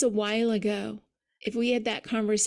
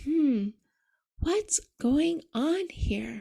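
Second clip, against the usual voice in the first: slow, halting, drawn-out, broken-up, pitched-up musing; 5 semitones higher than usual. Showing how to ask oneself a curious question: slow, broken-up delivery. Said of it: "say it slowly and broken up that way".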